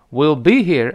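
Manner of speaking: be hit hard, will swallowed quickly. English lesson on reading will be here: stress on be, will rushed. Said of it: "那个be 是重读的，就will 一带而过be here，will be here 是这么读的".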